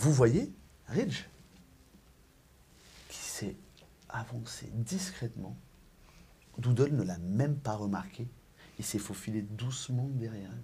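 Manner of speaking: soft, hushed narrating voice.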